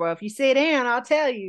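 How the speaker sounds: put-on rural country-boy accent. Retelling what a man said after slamming his hand on the table, country boy accent. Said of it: "I say that with an accent because I feel like he has an accent".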